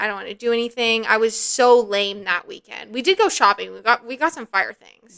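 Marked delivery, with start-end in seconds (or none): 0.0-1.0 tearful, crying voice. Retelling sitting on the floor heartbroken, imitating own past crying. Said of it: "I'm, like, crying. I'm like".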